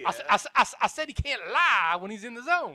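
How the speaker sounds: put-on high, loud stutter with Southern accent. Voicing a character in a courtroom scene: Foghorn Leghorn voice. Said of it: "kinda lost the accent there. I was going for Foghorn Leghorn".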